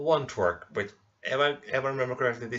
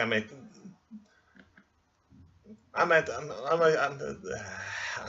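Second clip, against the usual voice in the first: stuttering, stammering speech; 3 semitones higher than usual. Welcoming viewers back after being away, stuttering.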